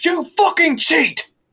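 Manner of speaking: very high, shrill, loud, raging and furious voice. Voicing a player who slams a fist on the table: angry accusation. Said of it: "slams their fist on the table, goes".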